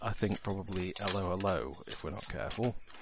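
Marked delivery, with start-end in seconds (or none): 1.0-1.8 soft mock French hello with dropped h. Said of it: "the worst we're gonna get is".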